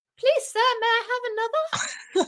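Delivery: very high, pleading British waif voice. Mocking the other speaker's British voice, in a British voice like an Oliver extra. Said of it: "when you do your British voice".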